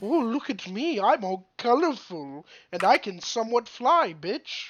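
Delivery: slow, sing-song, haughty, smug voice. Naming the most sarcastic animal, voicing a high and mighty peacock. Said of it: "they feel like they're so high and mighty".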